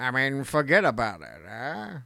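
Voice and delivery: low voice with a thick Italian accent. Asked how you would do an Italian Morgan Freeman, answer with an Italian Morgan Freeman impression. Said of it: "How would you do an Italian Morgan Freeman?".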